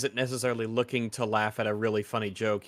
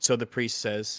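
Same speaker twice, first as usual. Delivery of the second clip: ordinary talk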